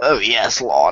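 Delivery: put-on British accent. Imagining a locker room scene, Rusev greets Cena in a British accent. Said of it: "he's talking in a British accent".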